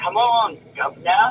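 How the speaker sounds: mock dry, needling, movie-style sarcastic jab. Quoting a movie character who talks back to a man: imitating a sarcastic movie character. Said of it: "sarcastic with the man".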